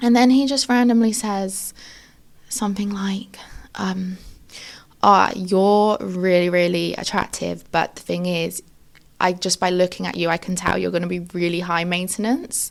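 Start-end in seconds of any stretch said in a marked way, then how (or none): none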